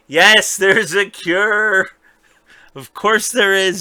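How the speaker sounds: high, exasperated yelling with "cure" stretched out. Speaker re-enacts their reaction to a TV show, retelling a scream at the TV. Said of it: "I'm screaming at the TV".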